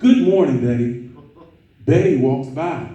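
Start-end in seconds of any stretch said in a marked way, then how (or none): 0.0-1.1 warm, deep-sounding voice, raised. Retelling greeting a coworker who ignored him: nice profound voice. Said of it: "in a nice, profound voice".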